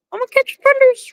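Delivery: very high, fast chihuahua voice.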